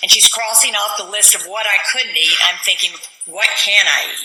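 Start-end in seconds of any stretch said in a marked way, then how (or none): none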